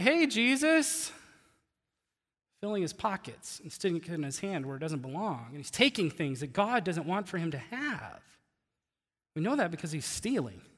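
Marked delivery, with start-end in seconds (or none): 0.0-1.1 high, slow, grasping voice. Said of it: "Judas is like".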